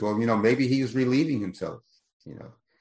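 ordinary talk

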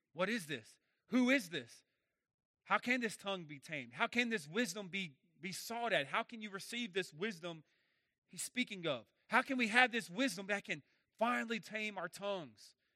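ordinary talk

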